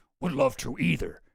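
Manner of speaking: low, deep, evil demon voice. Reading out Bannon's reply in an exchange with Epstein, evil demon voice. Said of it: "I give him like the evil demon voice".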